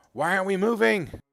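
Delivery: very high, very loud, shrill character yell. Describing a scene with gunshots, then a line in Jaeger voice. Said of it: "In a Jaeger voice".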